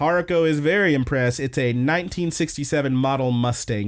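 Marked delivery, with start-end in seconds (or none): none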